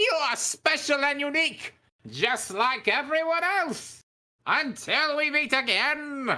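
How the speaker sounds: very high, loud animated-villain voice. Quoting a line from a Skeletor clip he animated, the speaker uses a Skeletor voice. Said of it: "in the words of Skeletor that I animated".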